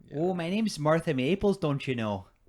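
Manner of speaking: put-on Canadian accent. Joking that the name sounds Canadian, speaker plays Martha Maples with a Canadian accent. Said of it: "sounds like a Canadian".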